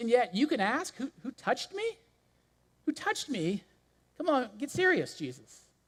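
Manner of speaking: put-on sarcastic tone. Retelling what a disciple says to Jesus: imitating a sarcastic disciple. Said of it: "he's so sarcastic".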